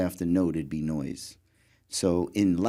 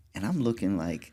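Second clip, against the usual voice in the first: ordinary talk, nothing marked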